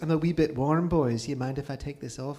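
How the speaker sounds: put-on thick, heavily laid-on Scottish accent. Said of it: "in this thick Scottish accent goes".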